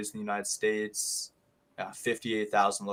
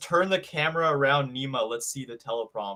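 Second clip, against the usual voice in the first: ordinary delivery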